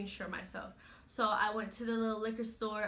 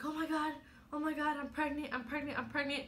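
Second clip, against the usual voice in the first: high, shocked, spiralling, freaking-out disbelief and panic; 5 semitones higher than usual. Retelling seeing two lines on a pregnancy test, acting out freaking out. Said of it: "I'm freaking out".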